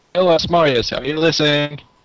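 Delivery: loud yelling in character voice. Calling out to Asmarius in character: yelling in character. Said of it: "I'm going to, uh, yell".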